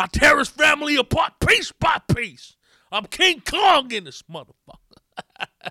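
very loud, high-pitched, menacing bellow. Act out the star turning on the interviewer, Denzel Washington going all Man on Fire. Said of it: "He got all man on fire on the interviewer".

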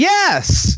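loud, eager, big bright "yes", very high. Showing how they answer a player's request while improvising: loud and enthusiastic. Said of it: "I say it all loud and enthusiastic like that".

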